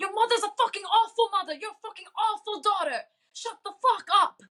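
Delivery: very high, janky, bad put-on British accent. Retelling what a woman from the UK yelled at her, janky British accent. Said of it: "had this janky British accent".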